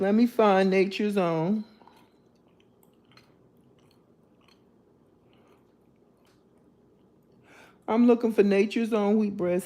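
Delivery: speaking with gum in mouth, chewing. Looking for a bread brand while chewing gum; chewing gum while talking. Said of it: "Sorry for chewing in your ear".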